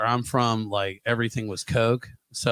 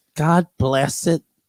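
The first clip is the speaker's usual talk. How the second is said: put-on old woman voice, higher and louder; 5 semitones higher, 6 dB louder than usual. Retelling what a grandma always said growing up: imitating his grandma. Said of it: "My grandma growing up, she'd always be like".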